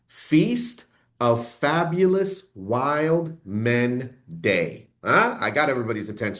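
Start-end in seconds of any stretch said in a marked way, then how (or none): 0.1-4.9 very slow, deliberate, each word drawn out. Answering a day-in-history question, saying the name slowly. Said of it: "I'm going to say this slow".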